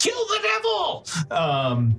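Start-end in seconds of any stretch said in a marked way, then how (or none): 0.0-1.1 very high, screeching goblin yell. Voicing a goblin yelling to another goblin: yelling goblin. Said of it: "This one yells to the other".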